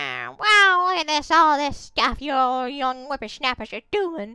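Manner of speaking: loud, wild, throat-straining crazy character voice. Trying out a voice for a game character, the speaker uses a crazy voice. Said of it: "that voice hurts my my throat".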